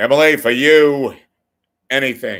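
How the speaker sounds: loud, high, belted talk-show host voice. Addressing a viewer by name: Larry King impression. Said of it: "That's my Larry King impression".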